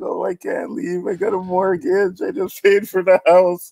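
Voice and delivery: mock very high, blubbering, crying, whining wail. Retelling a movie scene where a character cries about leaving. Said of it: "he's crying".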